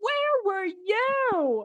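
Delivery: very high, shrill acted scream, "you" drawn out. Retelling own reaction while watching a TV scene, imitating own screaming. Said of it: "I was screaming at my T V".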